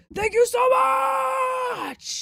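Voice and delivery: loud yell, very high, much stretched out. Thanking someone by name, excitedly: being loud. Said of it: "I'm being loud".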